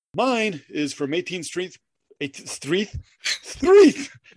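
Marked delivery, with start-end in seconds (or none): 3.3-4.1 high, loud shrieking voice. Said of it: "Sorry, too much Monty Python".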